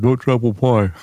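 muffled voice, talking with mouth full of food. Recalling a movie character's line, talking with mouth full. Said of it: "he said it with his mouth full. He was like".

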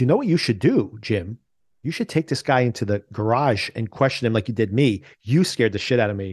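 ordinary talk

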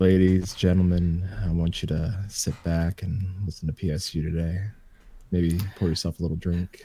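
deep radio announcer voice. Showing the others a put-on radio voice: smooth low radio voice. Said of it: "when I put on radio voice".

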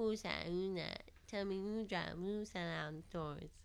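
put-on baby-like voice. Doing an impression of Mace after talking about him: Mace impression, baby-like voice. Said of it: "he sounded like a baby".

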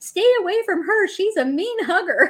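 put-on yelling at a very high pitch. Retelling what a woman yelled after being asked to stop, mock yelling. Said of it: "she starts yelling".

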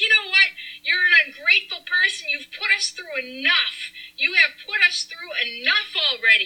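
play-acted heated anger, pitch pushed up high. Retelling a fight, the speaker acts out yelling at the woman she just saved: retelling a yell. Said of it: "And I'm yelling".

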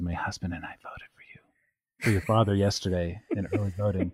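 mock whispering. Retelling a story from a book where a cashier whispers: imitating someone whispering. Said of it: "she has to lower her voice to a whisper".

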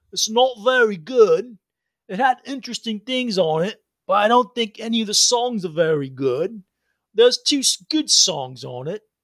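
drawling British rock-star voice. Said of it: "my best, uh, uh, [name] British drawl voice".

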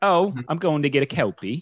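bad, high Australian accent sliding into British. Showing how a word sounds like an Australian snack, bad Australian accent. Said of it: "You sound like a British governor".

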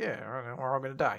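put-on flat, dry delivery. Summing up a story scene for a listener, quoting a deadpan line. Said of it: "how deadpan it is too".

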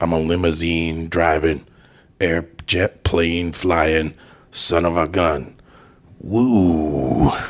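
very slow put-on American accent, woo drawn out. Showing another speaker an impression after being asked: Ric Flair impression. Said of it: "you wanna hear my Ric Flair?".

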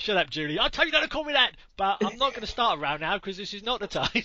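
put-on London Cockney accent. Playing a character in a comic bit about Ray and Dave driving, Cockney accent. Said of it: "your Cockney accent is far better than mine".

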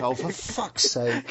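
put-on, perfectly English-sounding voice. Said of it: "perfectly English".

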